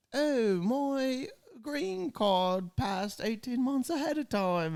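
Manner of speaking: very high, slow, bad Aussie accent drifting British. Reading a client's text aloud, the speaker puts on a bad australian accent. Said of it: "reading it in that voice".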